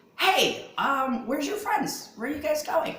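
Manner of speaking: very high, jittery, jumpy small voice. Voicing the character who meets the orc outside the front door, jumpy little voice. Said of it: "he's met by that same jumpy little voice".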